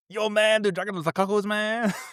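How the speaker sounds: put-on very high-pitched Latin American Spanish accent. A dad retelling reading his son's book aloud, Cheech Marin Oliver and Company accent. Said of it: "Oliver and Company accent when I read".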